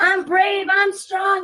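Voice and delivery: mocking high yell.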